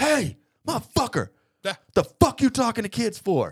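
very high, furious, all-out screaming. Retelling a dad screaming at a man talking to kids, imitating a man screaming. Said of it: "screaming at him".

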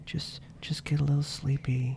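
very quiet, soft, hushed, low-key coaxing. Telling podcast listeners to imagine falling asleep: talking quietly. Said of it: "We're talking real quietly now".

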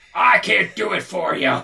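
gruff, slow growl. Showing another speaker how to say the line: gruff Al Pacino voice.

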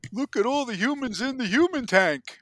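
terrible, shrill, very loud put-on squeal. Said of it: "That was a really terrible Crush impersonation".

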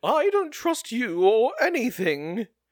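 put-on very high, loud, slow, drawn-out foppish accent. Recapping a scene, redoing Lugad's line, now in Lugad's foppish accent. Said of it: "I forgot to do his foppish accent".

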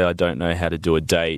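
plain

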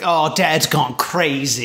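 plain

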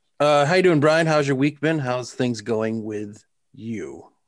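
polished, smooth radio announcer delivery. Welcoming everybody to the show and greeting the co-host, the speaker uses a radio voice. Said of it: "You're using your radio voice".

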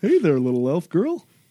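big, exaggerated, goofy character voice. Voicing a mushroom-covered spore druid greeting an elf: voicing Umu, a goofy spore druid. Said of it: "he kinda comes up".

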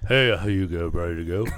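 impression, dropped low and played cool.

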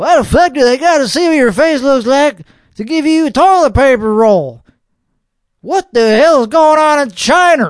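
American accent creeping through. Speaker reacting to something they read, getting passionate: texas accent coming out. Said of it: "my Texas accent is coming out".

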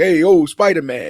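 put-on loud, heavy Italian mob-boss accent. Speaker describing an actor's take on a villain, doing an Italian gangster Kingpin voice. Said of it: "like he's doing it like his Italian version of Kingpin".

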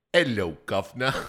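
loud, showy, put-on British accent. Asked to do it again, saying the prompted line in a put-on British accent. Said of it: "do it again. Say, hello, Governor".

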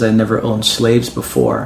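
ordinary delivery

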